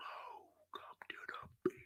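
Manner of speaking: deep, breathy whispering voice. Imagining the beach calling the speaker to come visit, in a deep voice. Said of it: "Why Mother Earth got that deep voice like that?".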